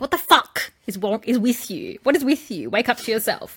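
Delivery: pissed-off, aggressive, angry tirade. Speaker acting out what they said back then, retelling an angry outburst. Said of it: "but I was pissed at the time".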